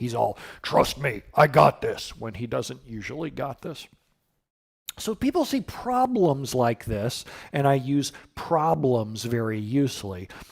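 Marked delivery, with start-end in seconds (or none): 0.6-2.2 dumb, stubborn, thick-headed guy voice. Explaining to viewers how they voice SQL Server, in the SQL Server guy voice. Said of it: "I always use a guy's voice for SQL Server because he's dumb and stubborn".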